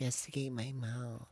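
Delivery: put-on babyish, baby-talk voice. Saying a line in baby talk after being asked to: baby talk. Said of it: "say investigate your mouth and baby talk now".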